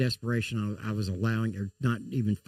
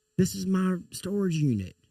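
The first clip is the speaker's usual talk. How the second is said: desperate, high-pitched hollering scream; 9 semitones higher than usual. Retelling being held at gunpoint by police at a storage unit: imitating own past screaming. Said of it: "I'm screaming".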